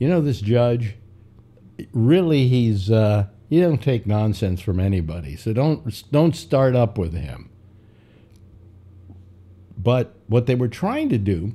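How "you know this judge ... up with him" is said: normal talking voice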